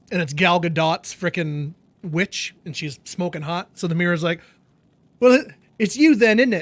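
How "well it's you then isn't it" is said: clumsy put-on English accent, raised and high. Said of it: "I can't do the accent very well".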